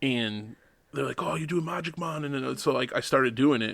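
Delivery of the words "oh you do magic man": put-on broad, thick Jamaican accent, pitched up. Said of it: "in this thick Jamaican accent".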